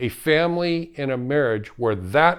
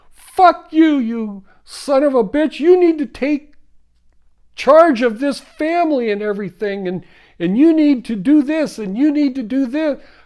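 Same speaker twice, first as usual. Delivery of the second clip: put-on furious scream, higher and louder; 11 semitones higher, 7 dB louder than usual. Acting out a furious wife screaming at her calm husband: imitating a furious screaming wife. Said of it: "your wife is so pissed off and screaming".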